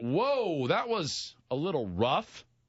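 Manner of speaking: firm, disapproving, slow and stern. Retelling a dog owner's dog lunging, imitating own disapproving tone. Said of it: "in that tone".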